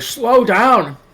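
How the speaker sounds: winded, panting voice. Recounting Billy trailing a woman who keeps rushing off, mimicking being out of breath. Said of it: "Billy's like out of breath".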